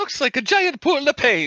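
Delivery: very high, loud, swooping character voice. Saying a game line after being asked for a Mario voice. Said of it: "if you wanna do a Mario voice and say that".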